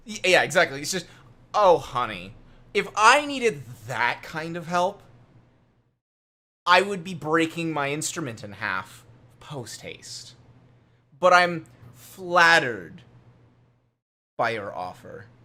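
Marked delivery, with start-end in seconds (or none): 1.5-15.2 put-on honeyed, sweetly catty, cutting mean-girl voice. Acting out how Gadger would reply, imitating Gadger as a mean girl. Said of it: "You sound like a mean girl".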